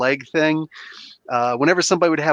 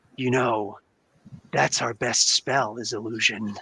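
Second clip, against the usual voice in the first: lizard monster voice, lower and quieter; 3 semitones lower, 6 dB quieter than usual. Voicing a creature that stabs a player and whispers close: lizard creature voice. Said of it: "says with the tongue actually tickling your cheek".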